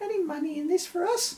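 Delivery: goofy, silly, very high put-on voice. Narrator reading a character asking a historian about money, in a silly voice. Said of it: "using a silly voice".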